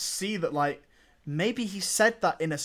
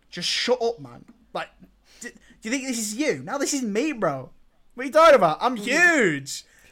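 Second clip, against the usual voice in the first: forceful, scoffing, dismissive, stretched out huge; 6 semitones higher, 5 dB louder than usual. Acting out the same film line as performed: imitating a forceful, dismissive delivery. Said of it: "it feels like he's like".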